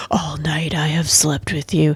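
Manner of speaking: sultry, low, hushed romantic poem-reading voice. Showing how reading aloud shifts from silly to a serious poem, in a romantic voice. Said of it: "Oh my God, my voice. Sorry. Romance".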